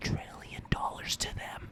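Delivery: put-on creepy whisper. Retelling a creepy moment by imitating Biden whispering.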